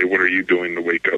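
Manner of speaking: normal talking voice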